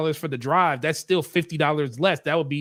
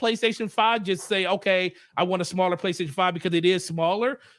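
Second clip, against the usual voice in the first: normal talking voice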